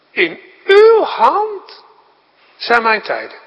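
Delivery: weight laid on uw hand. Showing where the emphasis goes for a sermon, stress on uw hand. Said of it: "Uw hand, dat krijgt de klemtoon".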